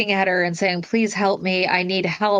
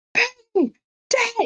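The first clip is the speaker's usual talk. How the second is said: put-on boy's yelling voice, higher; 14 semitones higher than usual. Retelling a scene where a boy calls upstairs: imitating a boy yelling. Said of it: "she reprimands him for yelling".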